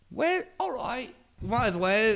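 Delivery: fake British accent, pitched very high. Voicing the rest of the world shrugging about the currency: put-on british accent. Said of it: "Why is the rest of the world British?".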